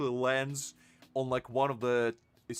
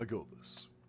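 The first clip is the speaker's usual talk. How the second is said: deepest possible voice, breathy and half-whispered; 4 semitones lower, 9 dB quieter than usual. Retelling a woman before she climbs through a window: very deep voice. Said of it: "in the deepest voice she could possibly say".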